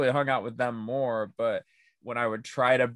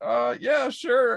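very high, loud put-on Southern accent; 12 semitones higher, 5 dB louder than usual. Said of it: "Southern, I guess, technically".

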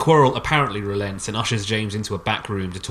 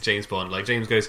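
ordinary talk

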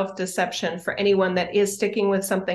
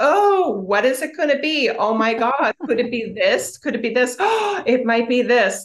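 sassy, sarcastic fake awe with swooping pitch; 4 semitones higher, 4 dB louder than usual. Retelling mocking a band teacher in class: imitating own mock shock and awe. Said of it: "shock and awe of the three pieces".

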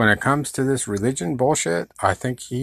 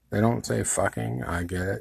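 usual speaking voice

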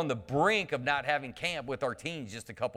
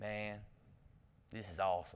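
drawl with every word stretched out; 5 semitones lower, 12 dB quieter than usual. Retelling what a boy at camp said: imitating a Matthew McConaughey drawl. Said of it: "but he talked like this".

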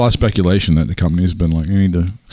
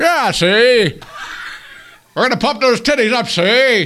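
put-on 1940s-style patter, very high and slow. Joking about paying for an upgrade: put-on 1940s-style voice. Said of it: "I've moved back to nineteen forty, and I have to talk like".

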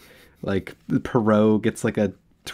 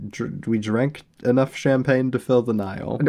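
ordinary talk

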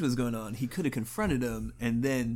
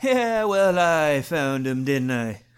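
booming, very loud put-on Irish accent; 3 semitones higher, 10 dB louder than usual. Voicing a character, Irish impression. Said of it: "Joe's doing an Irish impression".

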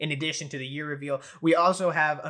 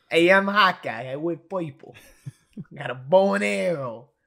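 loud, dumb put-on tough-guy accent; 5 dB louder than usual. Speaker impersonating a character during a chat about impressions: dumb accent. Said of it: "they all pretty much have dumb accents".

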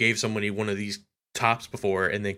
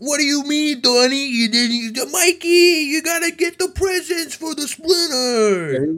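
put-on over-the-top New York accent, much higher, louder; 8 dB louder than usual. Riffing on the turtles' voice actors, in an exaggerated New York accent. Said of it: "They sound like you and me doing our".

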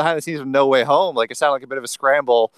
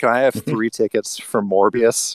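deflated, put-upon, utterly dejected tone; 4 semitones lower than usual. Retelling a tired mom asking for movie tickets, imitating a dejected voice. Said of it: "in just the most, like, dejected voice".

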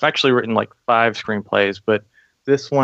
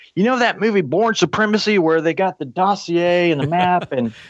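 put-on Southern accent, higher pitch; 8 semitones higher than usual. Retelling what a general told the group: imitating a general's Southern accent. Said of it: "he had, like, a Southern accent".

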